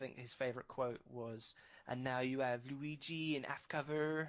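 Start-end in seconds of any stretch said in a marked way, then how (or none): 1.9-4.3 put-on French accent. Quoting a game developer's favorite line: put-on French accent. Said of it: "my interpretation of his interpretation of a French accent".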